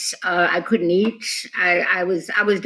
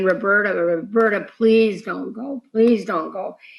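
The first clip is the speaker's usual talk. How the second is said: put-on crying, tearful woman's voice. Retelling a mother's plea while holding the dying speaker: imitating a mother crying. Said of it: "my mother holding me in her arms and crying and saying".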